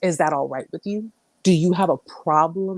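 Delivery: play-acted sneering, condescending, very nasty tone. Retelling how a man questioned the speaker's reply: imitating a condescending, nasty tone. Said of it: "Like condescendingly and very, very just nasty tone".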